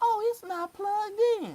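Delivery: itty-bitty little teacher voice, very high. Retelling what the history teacher said after twenty minutes on the phone: itty bitty teacher voice. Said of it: "in that little itty bitty teacher voice".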